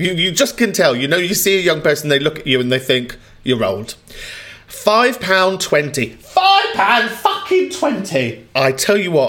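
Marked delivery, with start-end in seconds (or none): 4.7-9.3 angry, much higher, slower. Complaining about being charged £5.20 by a young server, livid. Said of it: "I am fucking livid".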